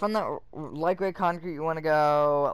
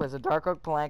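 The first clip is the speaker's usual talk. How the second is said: voice breaks on a word. Reading out building steps while playing, with a voice crack. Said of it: "voice crack".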